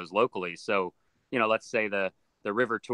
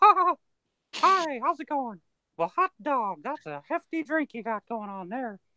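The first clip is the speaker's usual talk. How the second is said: put-on squeaky, drunken high voice. After admitting they've been drinking, the speaker does a bit: drunk Mickey Mouse impression. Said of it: "A drunk Mickey Mouse is okay".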